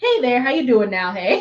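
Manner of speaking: put-on thick Wisconsin accent. Quoting what the other speaker said when pulling up to a valet, thick Wisconsin accent. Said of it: "you have the thickest Wisconsin accent".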